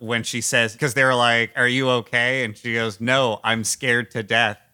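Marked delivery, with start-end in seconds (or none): 3.0-4.5 dead-level, expressionless, flat deadpan monotone. Quoting a woman's line from a movie: imitating flat deadpan delivery. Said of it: "the flattest, most deadpan delivery".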